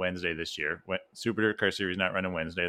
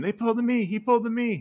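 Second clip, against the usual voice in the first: screaming out, very high-pitched; 6 dB louder than usual. Retelling watching it with the crew: retelling a scream. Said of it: "I literally was screaming".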